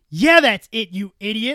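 mock nasty, cutting tone. Retelling how someone on a TikTok live answered: imitating someone being mean. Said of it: "she just gets super mean".

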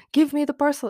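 high, overly emotional, pleading begging voice. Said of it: "pleading with me".

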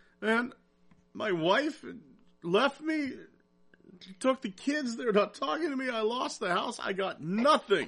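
high, sobbing, crying lament. Telling a joke, voicing the man about to jump, imitating a man crying. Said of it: "he's crying".

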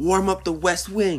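screaming, voice shot very high and loud. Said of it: "and he was screaming".

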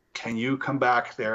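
ordinary talk

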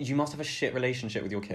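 normal talking voice

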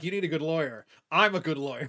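usual speaking voice

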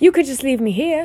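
hopeful tone. Harry puts in a suggestion to Aunt Petunia, hopeful. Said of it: "Harry put in hopefully".

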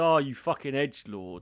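acted, put-on sarcastic tone. Imagining someone insulting them on stage, the speaker acts it out: mock-sarcastic insult.

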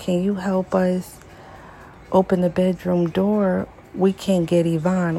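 plain

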